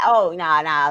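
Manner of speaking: put-on mad, protesting voice. Retelling how someone got mad at her paranoia: imitating someone getting mad. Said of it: "And she got mad".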